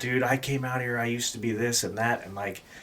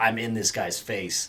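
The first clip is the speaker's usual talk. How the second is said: usual speaking voice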